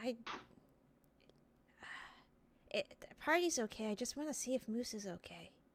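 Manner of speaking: very quiet, hushed whisper. Voicing a character who answers a quiet question: whispering back. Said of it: "she just whispers back at you".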